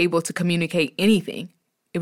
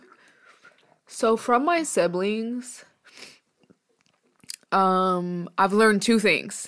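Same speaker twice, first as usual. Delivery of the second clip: choked up, close to crying, quieter; 2 semitones higher, 4 dB quieter than usual. Sharing what was learned from siblings after saying a tear is falling: tearful, close to crying. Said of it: "I literally have a, a tear coming down".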